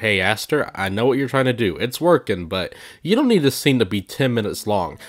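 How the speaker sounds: usual speaking voice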